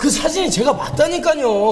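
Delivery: plain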